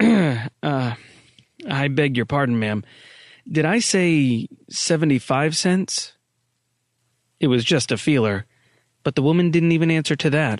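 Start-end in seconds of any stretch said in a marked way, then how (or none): 0.0-6.1 uncertain, hesitant, tentative delivery. Miller speaks to a woman who gives him no answer: uncertain. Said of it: "said uncertainly".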